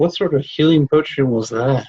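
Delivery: mumbled quietly under the breath. Player speaking as their character during the game, muttering under breath. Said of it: "I just mutter under my breath".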